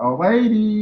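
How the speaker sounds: very high-pitched, spastic-sounding speech. Retelling doing a Jerry Lewis impression in front of Jerry Lewis. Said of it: "doing the spastic talk in the voice".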